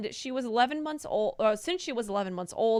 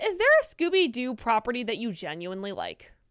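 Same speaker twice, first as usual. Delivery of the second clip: usual speaking voice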